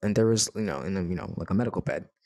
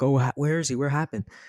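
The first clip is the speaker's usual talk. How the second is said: mock frantic, flustered, high-pitched panicked voice; 6 semitones higher than usual. Retelling someone swinging the door open frantically: imitating someone panicking. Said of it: "she's, like, panicking".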